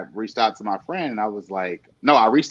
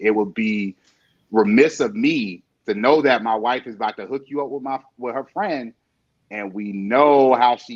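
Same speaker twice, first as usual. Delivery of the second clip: ordinary talk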